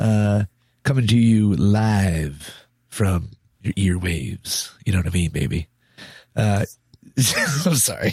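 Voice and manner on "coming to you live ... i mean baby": smooth, laid-back jazz radio host voice. Opening a gaming podcast episode, in a smooth jazz radio voice. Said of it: "like a nice like jazz radio".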